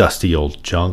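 plain

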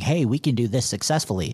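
ordinary talk

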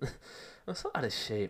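out of breath while speaking.

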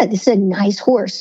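normal talking voice

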